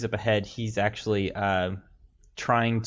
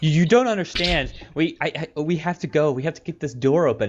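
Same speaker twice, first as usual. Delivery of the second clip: panicked, high, freaked-out stumbling stammer; 7 semitones higher, 6 dB louder than usual. Voicing a panicked man trying to get a door open: freaked out. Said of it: "he's still pretty freaked out".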